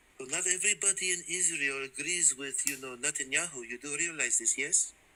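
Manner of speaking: Israeli-accented speech. Arguing in a debate about Israel, put-on Israeli accent. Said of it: "I was doing an Israeli accent".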